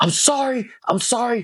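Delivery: slow, high-pitched, dragged-out screaming. Speaker acts out what their past self said, retelling own screaming. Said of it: "I started screaming".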